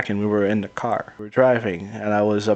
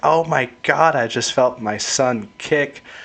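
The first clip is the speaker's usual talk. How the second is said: slow, tearful, emotional put-on outpouring; 4 semitones higher than usual. Retelling first feeling his son kick while driving: retelling own tearful words. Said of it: "I'm tearing up".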